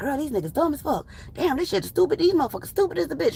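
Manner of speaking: hushed, secretive whisper. Retelling what the ladies whispered in a corner at Sabbath ceremonies: imitating a whisper. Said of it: "we would be in a corner somewhere whispering".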